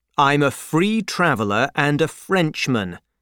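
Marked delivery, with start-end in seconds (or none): none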